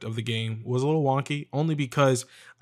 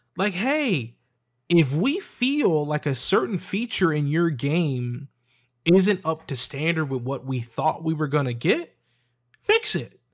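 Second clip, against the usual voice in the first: raised, animated, emphatic voice; 4 semitones higher, 3 dB louder than usual. Talking about games, with a point to prove, in a raised voice. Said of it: "I'm raising my voice because I got a point to prove".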